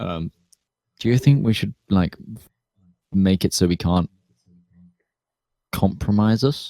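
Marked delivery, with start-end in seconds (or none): 1.0-6.7 secretive stage whisper, fully voiced. Speaking in character privately to Tyburn: half-whispering. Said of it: "I'm gonna whisper this to Tyburn".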